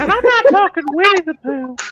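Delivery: put-on high-pitched old-man voice. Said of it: "Herbert from Family Guy".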